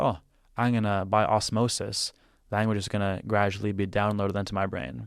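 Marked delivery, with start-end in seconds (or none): none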